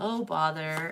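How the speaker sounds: unexcited, resigned, glum, low-energy cartoon-donkey sigh. Describing someone stuck in sluggish energy, doing an Eeyore voice. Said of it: "like Eeyore from Winnie the Pooh".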